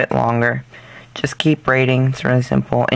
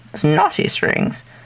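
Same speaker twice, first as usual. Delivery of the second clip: fake, put-on British accent; 3 semitones higher than usual. Making a pun while explaining how to fix knotted strings, in a put-on British accent. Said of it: "British accent?".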